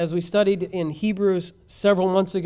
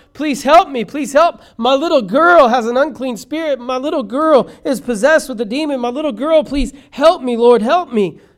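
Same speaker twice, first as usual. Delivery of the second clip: very loud, high, begging, pleading cry; 6 semitones higher, 9 dB louder than usual. Retelling a woman begging Jesus to help her little girl: retelling a woman crying out. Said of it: "she's crying out".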